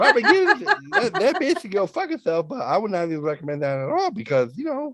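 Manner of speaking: lifted, high-pitched, swooping voice. Complaining about someone after being asked to talk higher: higher pitched voice. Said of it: "do a higher pitched voice while you're doing it".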